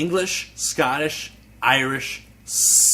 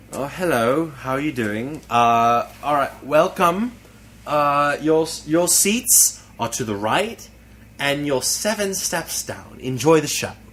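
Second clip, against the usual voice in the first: polite, put-on British English dialect accent. Showing how he nearly welcomed people to the show: British English accent. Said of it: "talking in an in an English dialect".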